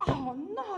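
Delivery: high, loud, surprised exclamation.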